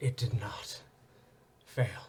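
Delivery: solemn, somber voice. Narrating the scene, voicing Exilian speaking to you from the scale: Exilian's somber voice. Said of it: "kind of in a somber voice".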